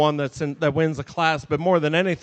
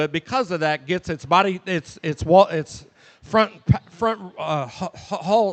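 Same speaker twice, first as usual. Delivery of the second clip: stuttering, stumbling over the words. Speaker explaining placings in a class, stuttering. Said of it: "I'm stuttering out here".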